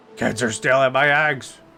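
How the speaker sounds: put-on angry old man voice. Doing the John Eggacycle bit, an angry old man yelling about eggs. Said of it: "I just sound like an angry old man yelling about eggs".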